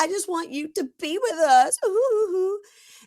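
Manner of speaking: very high, put-on crying voice, fake sobbing. Retelling a reality show scene, a woman begging the couple: imitating fake crying. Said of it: "fake cries".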